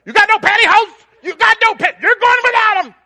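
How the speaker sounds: shrill, full-volume, very high-pitched yelling. Parent retells a Sunday-morning flat tire, retelling yelling at a kid. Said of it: "I'm yelling at one of the kids".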